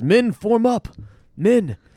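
very high-pitched, very slow, drawn-out yell. Retelling a battle scene where a character rallies soldiers: retelling a yell. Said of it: "He yells".

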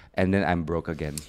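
normal talking voice

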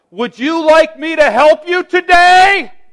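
very loud, booming, very high-pitched voice. Acting out offering help to someone begging on temple steps, saying it real loud. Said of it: "say real loud".

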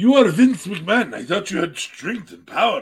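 bad, put-on Russian accent. Playing a character in a game scene, bad Russian-sounding accent. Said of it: "My bad accent was really racist".

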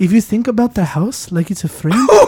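put-on failed, barely there, high-pitched Scottish accent. Speaker keeps going in character during a bit, bad Scottish accent. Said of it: "Why are you not Scottish at all?".

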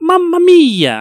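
very high, loud exclamation. Speaker compares how two game brothers exclaim; Mario 'Mamma Mia' impression. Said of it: "Mario's a little bit more higher pitch".

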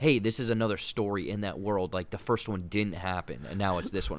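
ordinary talk

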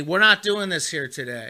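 ordinary talk

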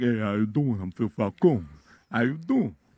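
mafioso shyster voice. Asked what a mafioso shyster sounds like, the speaker demonstrates: mafioso shyster voice. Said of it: "A mafioso shyster is like".

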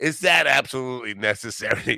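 play-acted condescending voice. Retelling questioning a guy's big pedal board, mock-condescending dick voice. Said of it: "in my dickiest dick voice?".

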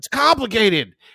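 very high, shrill yelled outburst. Retelling how the son answered, then stormed out: imitating a son yelling. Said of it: "He yells it".

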